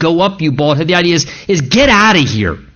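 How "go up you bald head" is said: imitated mocking, disrespectful taunting tone. Retelling what they said in the story of Elijah's departure: imitating a mocking tone. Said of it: "in their mocking, disrespectful tone".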